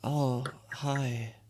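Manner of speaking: sleepy, groggy, barely awake voice. Voicing a sick elf just woken by a tap: groggy just-woken voice. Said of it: "he's very groggy".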